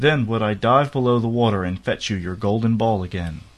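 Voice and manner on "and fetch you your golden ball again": ordinary delivery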